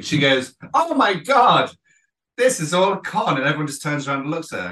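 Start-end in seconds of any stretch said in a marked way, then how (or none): 0.7-3.4 acted big carrying voice, really loud, high, slow. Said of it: "really, really loud, loud voice".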